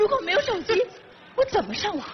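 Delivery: crying, high and tearful wailing. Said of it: "别哭了".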